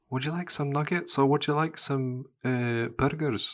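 high-pitched Scottish mum accent.

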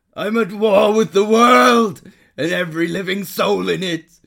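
very loud, very high-pitched vampire voice. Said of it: "proven you can do the voice".

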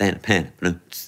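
voice dropped low, put on. Retelling what she used to say to you, in the voice she used for cancer. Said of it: "she used to use the voice she used for cancer".

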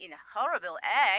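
ordinary talk, nothing marked

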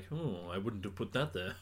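put-on sassy AI butler voice. Imagining the suit's AI commenting during testing, sassy Jarvis voice. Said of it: "a really sassy Jarvis being like".

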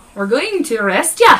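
loud put-on Irish accent. Retelling the arrest in Dublin as the officer: put-on Irish accent. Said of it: "Was it the accent?".

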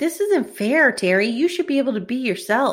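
put-on all-sad, sorrowful girl voice. Retelling what the girl from the beginning says to Terry, imitating a girl sounding all sad. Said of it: "the girl from the beginning is like all sad and she's like".

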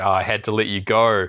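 plain

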